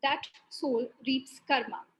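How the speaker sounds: plain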